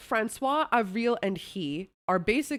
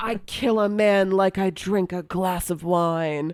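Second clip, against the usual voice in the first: louder, hammy, mock over-the-top theatrical delivery; 6 dB louder than usual. Retelling a criminal's boast to a crowd: imitating hammy theatrical delivery. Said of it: "He's hamming it up".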